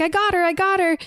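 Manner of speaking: put-on panicky frantic cry, high half-scream. Retelling a movie scene where a character bursts in: imitating Emily screaming and freaking out. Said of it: "kind of screaming and freaking out".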